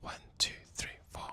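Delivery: very soft, bare, breathy whisper. Testing a microphone from the front of the house: whisper. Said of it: "I'm just gonna whisper".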